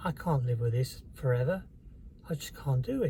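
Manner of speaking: normal talking voice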